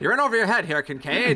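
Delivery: put-on rapid old-time slang accent. Acting out a film noir detective-novel scene warning kincaid: fast 1920s slang accent. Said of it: "a nineteen twenties slang accent".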